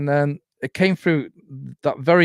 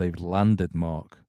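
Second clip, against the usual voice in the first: mimicked radio voice, much lower; 9 semitones lower, 6 dB quieter than usual. Speaker retelling what came out of the radio while looking at the sky: imitating the radio voice's tone. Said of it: "like that tone".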